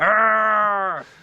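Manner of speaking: growling voice. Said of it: "weird growl when he gets mad".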